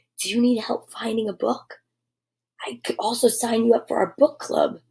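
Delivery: whispering. Reading a story aloud, the librarian offering help: whispering. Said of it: "whispered the librarian".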